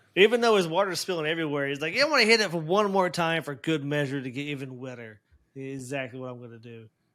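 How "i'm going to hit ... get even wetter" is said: plain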